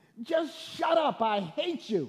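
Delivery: high-pitched, loud, angry snapping.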